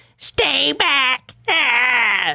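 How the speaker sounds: put-on clownish goblin-like voice, high and creaky. Acting out a woman's words from a police report in a clownish voice. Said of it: "in a clown".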